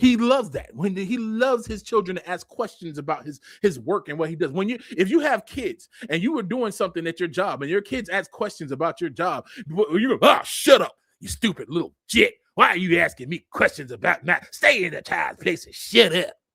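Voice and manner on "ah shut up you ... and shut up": put-on unhinged, crazy parent voice. Acting out a parent snapping at a child's questions: put-on crazy parent voice. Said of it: "You sound like a, a, a crazy parent".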